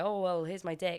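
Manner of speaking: normal talking voice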